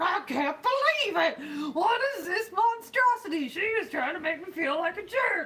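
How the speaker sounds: high, loud shout in mock outrage. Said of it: "and you're like".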